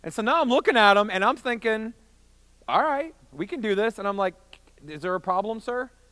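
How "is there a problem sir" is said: play-acted unfriendly, confrontational, snippy tone with attitude. Retelling facing a sweating man who eyed him up, retelling a snippy tone. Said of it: "I have a little bit of an attitude in my voice".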